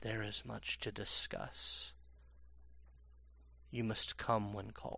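close, quiet whisper right into the ear. Voicing a character who whispers into a player's ear: whispering. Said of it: "he whispers".

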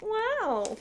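wow floated up to very high pitch. Doing an impression for the other speaker: Owen Wilson "wow" impression. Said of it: "Owen Wilson".

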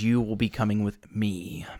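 low creature voice. Voicing a creature that speaks to a player: voicing a creature. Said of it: "it begins speaking towards you and says".

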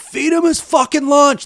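shrill, very high, loud screaming. Retelling a hockey player's words from the bench at a game: imitating Brett Hull screaming.

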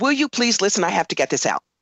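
ordinary delivery

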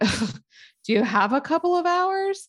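thick mock sarcasm. Retelling Major Sam's answer to Jack's question, retelling a sarcastic reply. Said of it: "Total sarcasm".

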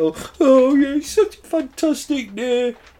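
very high put-on crying, fake tearful voice. Retelling how he went on GMB when the first vaccine rolled out, imitating someone crying. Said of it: "like crying".

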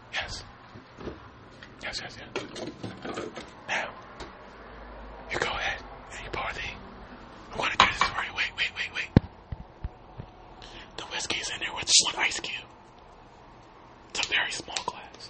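very soft ASMR whisper.

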